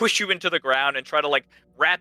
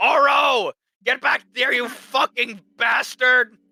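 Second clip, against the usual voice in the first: very high, very slow, drawn-out raging shriek; 10 semitones higher, 5 dB louder than usual. Voicing a character chasing a thief: screaming in rage. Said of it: "you hear the scream of Malagus going".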